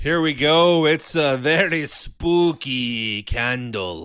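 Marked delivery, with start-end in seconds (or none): 0.8-4.0 put-on slipping into Spanish accent.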